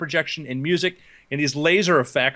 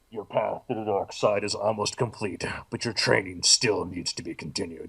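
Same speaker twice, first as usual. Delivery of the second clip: very deep villain voice, pitched right down; 8 semitones lower, 6 dB quieter than usual. Retelling what Darth Vader said to the speaker: Darth Vader voice. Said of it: "Darth Vader voice".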